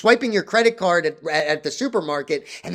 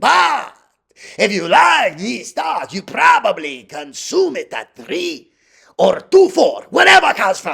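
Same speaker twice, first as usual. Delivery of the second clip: loud, high, put-on Japanese accent; 6 semitones higher, 5 dB louder than usual. A video host slips into a voice mid-explanation: Japanese sushi chef voice. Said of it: "I don't know how I turned into a Japanese sushi chef".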